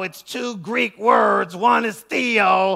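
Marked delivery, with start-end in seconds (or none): 2.0-2.8 the word theo drawn out slowly. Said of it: "when you say it slow".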